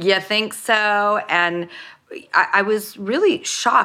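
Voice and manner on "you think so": acted, wisecracking, sarcastic, jokey tone. Quoting lines of the sarcastic film character Gertie: sarcastic Gertie voice. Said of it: "jokey and sarcastic my character Gertie".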